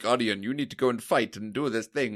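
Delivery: put-on faux American accent. Discussing a Destiny reference, the speaker voices a game character: faux American accent as Zavala. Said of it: "the faux American accent is like Zavala turning around and being like".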